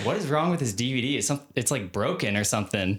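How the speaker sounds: plain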